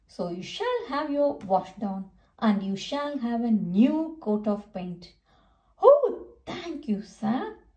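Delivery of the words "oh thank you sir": high, swooping, sing-song storybook exclaiming. Reading Percy's reply to the sir addressing him in a story, exclaiming. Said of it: "exclaimed Percy".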